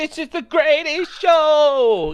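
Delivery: flouncy, prancing showman voice, very high, slow. Players mocking a magician character, mimicking a prancing magician. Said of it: "he just prances around going".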